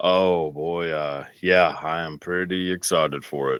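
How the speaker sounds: flat, dry deadpan, sounds sarcastic. Asked by a co-host if he's happy about the new film, answering flat and deadpan. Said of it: "I can never tell if you're being sarcastic".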